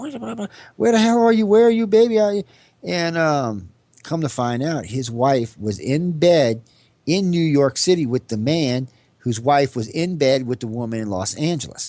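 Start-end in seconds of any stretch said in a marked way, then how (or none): 0.0-2.2 play-acted, very high-pitched, frantic shrieking scream. Retelling a phone call from a woman: imitating a woman screaming. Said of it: "she's screaming at".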